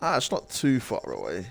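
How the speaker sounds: put-on plummy, posh background-character voice. Playing the game, catching himself sounding like the others: posh Harry Potter NPC voice. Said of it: "I'm starting to talk like a Harry Potter N P C".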